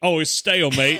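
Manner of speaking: put-on Australian accent. Joking about an australian person biting old bread: australian accent. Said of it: "when an Australian person takes a bite".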